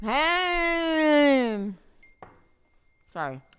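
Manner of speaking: very high, very loud voice through a full mouth. A podcast host greets listeners right after the show's intro: mouth full of food. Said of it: "she still has a mouthful of food".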